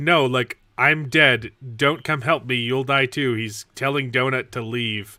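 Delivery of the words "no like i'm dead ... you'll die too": ordinary delivery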